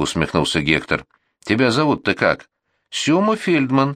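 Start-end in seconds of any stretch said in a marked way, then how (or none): 2.9-4.0 sheepish, guilty tone, pitched up. Narrator reads a little man giving his name when asked, guilty tone. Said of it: "виноватым тоном сказал человечек".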